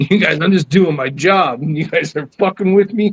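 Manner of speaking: put-on pissed-off, angry complaining tone. Retelling what an angry security guard texted: imitating someone pissed off. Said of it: "he was pissed".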